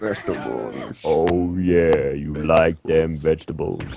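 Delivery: very low, deep, slow, drawn-out sexy voice. Joking with the group about vegetables: put-on sexy voice. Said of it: "bust out his sexy voice".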